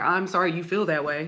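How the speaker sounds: mock, put-on super sassy tone. Imitating how people say the phrase: mocking a super sassy tone. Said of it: "it just sounds super sassy".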